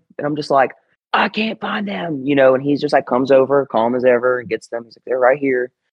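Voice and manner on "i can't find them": shrill, high, stretched-out yelling. Speaker retells yelling at him while searching a backpack; retelling own past yelling. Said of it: "And I'm like yelling at him".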